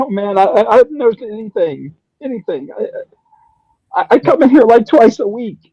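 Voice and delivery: very high voice, nearly in tears, close to sobbing. Voicing a handcuffed cleaner answering questions, almost in full-blown tears. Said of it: "he's almost in full-blown tears".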